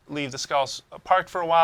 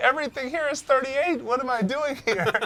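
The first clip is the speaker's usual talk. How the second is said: mock frightened voice, pitched higher; 11 semitones higher than usual. Describing finding a game area far above your level: put-on scared voice. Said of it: "from a scared voice of a level ten".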